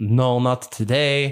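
put-on, acted Russian accent. Voicing the Chad character appearing in the game: Russian accent. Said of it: "He has a Russian accent now".

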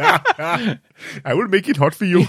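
convincing put-on Indian accent. Joking in a conversation, putting on an Indian accent. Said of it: "That was a fucking great accent from you".

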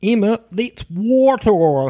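put-on Australian accent. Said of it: "my favorite thing is an Australian accent".

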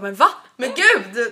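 very loud, drawn-out, stunned panicked cry. Retelling hearing that someone was upset, retelling a panicked outburst. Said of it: "blev så här aspanikad".

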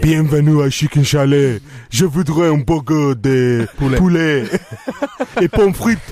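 put-on French accent. A radio host doing a bit about chicken chalet: french impression. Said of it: "French impression".

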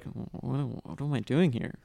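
flustered, frazzled cartoonish voice. Describing a comic panel, voicing Snoopy as put-on frazzled. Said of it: "Like he's frazzled".

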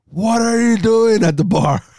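play-acted, very high, shrill yelling. Retelling one's reaction after Odell Beckham fumbled the ball: retelling a yell. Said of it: "You're yelling".

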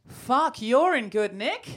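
put-on Australian accent, loud, slow, deliberately drawn out. Voicing a boyfriend's remark on request: put-on Australian accent. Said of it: "I can't do Australian accents. Will you do this for me?".

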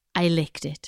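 acted expressionless deadpan, low and flat. Reading a story aloud, quoting a man's three haunting words: deadpan. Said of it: "looked us deadpan in the eye and just said".

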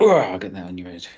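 put-out, fed-up, irritated, exasperated ugh. Imitating the archbishop pressing the crown onto the king's head: imitating an annoyed archbishop. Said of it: "I wonder if he was just a bit annoyed".

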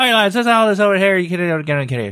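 put-on Irish accent. Joking with another speaker about using an Irish guy's voice, put-on Irish accent. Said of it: "the Irish guy going".

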